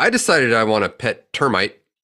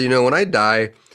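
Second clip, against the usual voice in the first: ordinary delivery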